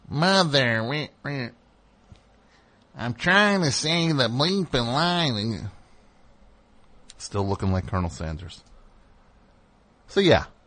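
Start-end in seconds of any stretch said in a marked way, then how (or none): 0.1-5.3 put-on slow, nasal delivery with New York accent. Retelling how the actor cursed after flubbing a line: imitating Ray Liotta's nasally New York voice. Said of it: "cursing in his nasally New York voice".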